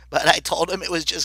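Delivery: ordinary delivery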